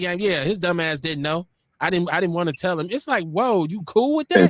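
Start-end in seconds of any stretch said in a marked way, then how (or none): none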